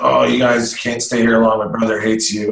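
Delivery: put-on very drunk man's speech. Retelling what a drunk man said on arrival: imitating a very drunk man. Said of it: "he's stupid drunk".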